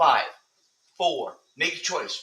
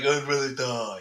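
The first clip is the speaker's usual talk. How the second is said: mocking put-on voice. Imitating how the other speaker would answer: mocking impression of the other speaker. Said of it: "is that what I sound like?".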